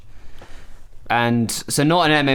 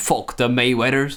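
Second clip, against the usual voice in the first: ordinary talk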